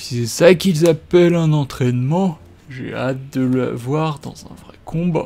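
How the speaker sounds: very loud put-on ogre growl. Playing a game, the speaker voices an ogre: attempted ogre voice. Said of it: "J'ai essayé de faire la voix de l'ogre".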